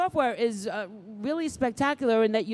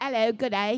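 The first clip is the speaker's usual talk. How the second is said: bad, fake, put-on Australian accent. Greeting an Australian guest, slipping into a bad put-on Australian accent. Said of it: "horrible habit of doing this when there's an Aussie around".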